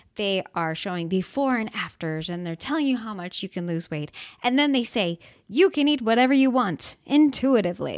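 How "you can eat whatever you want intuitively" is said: put-on loud, salesy advertising voice. Quoting what weight-loss programs tell you, in a salesy marketing voice. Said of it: "I put on my marketing voice there for you for that".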